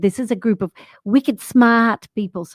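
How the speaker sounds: put-on Rhode Island accent. Speaker retells addressing a non-profit group, in a put-on Rhode Island accent. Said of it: "Rhode Island a- accent and said".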